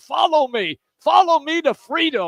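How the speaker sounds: wild, high, loud scream. Retelling a commercial with a tie around his head: imitating Charlie Steiner screaming. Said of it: "and he's screaming".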